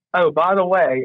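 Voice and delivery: put-on South African accent drifting toward Australian. Telling a funny story about arriving at work in Sapphire Valley, imitating Kevin's South African accent. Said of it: "that's my Australian accent. I'll stop, uh, South African accent".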